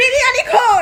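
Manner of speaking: loud, high-pitched teasing shout.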